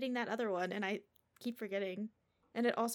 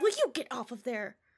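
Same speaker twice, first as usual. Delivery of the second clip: loud, mock-mad, scolding, angry voice; 6 dB louder than usual. Retelling what a man said when he was mad, imitating an angry man. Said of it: "he was mad".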